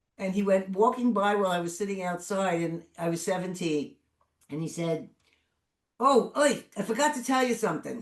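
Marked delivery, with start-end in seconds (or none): 6.0-8.0 put-on heavy Brooklyn accent, higher and louder. Retelling what a father said while walking by: imitating heavy Brooklyn accent. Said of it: "with a heavy Brooklyn accent".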